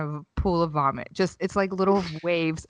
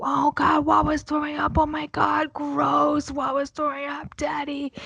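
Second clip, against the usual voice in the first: put-on high, squealing children's shrieks of disgust; 9 semitones higher than usual. Retelling a grocery store mishap, imitating kids screaming. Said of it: "just start screaming, like".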